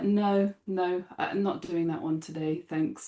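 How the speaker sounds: mock plain, unbothered, slow, matter-of-fact delivery. Retelling refusing a teacher's task as a kid: imitating a matter-of-fact refusal. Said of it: "really matter of fact as a kid".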